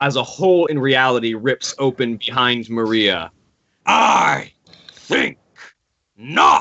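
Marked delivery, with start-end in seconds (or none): 3.8-6.6 thunderous, echoing, rough, booming angry voice. Voicing a warlock patron whose voice booms through the air: booming angry voice. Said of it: "An angry voice kind of echoes through".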